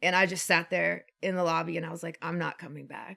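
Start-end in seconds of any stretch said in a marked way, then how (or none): 2.2-3.2 low, soft, tearful, defeated voice. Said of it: "Like, I was just crying".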